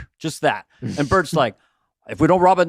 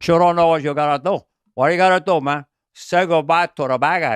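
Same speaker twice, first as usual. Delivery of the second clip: exaggerated, hard-pushed Cuban gangster accent. Quoting Al Pacino's line from Scarface: Al Pacino Scarface impression. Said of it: "he extenuated his Cuban accent in Scarface".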